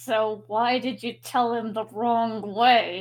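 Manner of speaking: slow, forced-polite, spoken through gritted teeth. Val, trying to stay polite, questions her, through gritted teeth. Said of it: "through gritted teeth".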